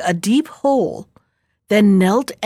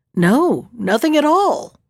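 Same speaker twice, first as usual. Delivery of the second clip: unruffled, easy, calm and composed; 3 semitones higher than usual. Narrator reads the young man answering the emperor's question: calm. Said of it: "the young man replied calmly".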